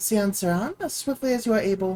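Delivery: ordinary delivery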